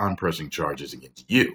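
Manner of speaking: ordinary talk, nothing marked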